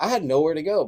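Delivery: put-on loud, heavy, strong Tennessee accent. Speaker quoting a man's remark while telling a story, in a very tennessee voice. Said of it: "he did it in a very Tennessee voice".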